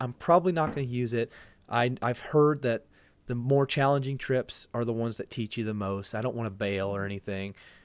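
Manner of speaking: normal talking voice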